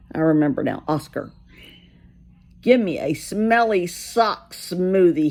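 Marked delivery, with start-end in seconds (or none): 2.7-5.3 grousing, grumbly, grumbling voice. Reading a children's story aloud, voicing Oscar the grouch: grumbling voice. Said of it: "he grumbled".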